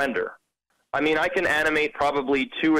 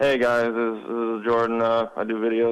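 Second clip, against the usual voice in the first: mock mopey, glum voice, lower; 4 semitones lower than usual. Retelling how they sounded when first starting videos: imitating own mopey past voice. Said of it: "I sounded like a mope".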